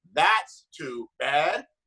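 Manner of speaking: synthetic, electronic, robotic phone assistant voice. Retelling what a phone said back after a breakup remark, in an electronic robotic phone voice. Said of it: "electronic robotic voice".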